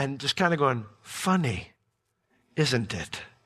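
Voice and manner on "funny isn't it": low, still, small inner voice. A parent recalling the inner voice heard while speaking to their kid: imitating a still, small voice. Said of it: "still, small voice in the back of you".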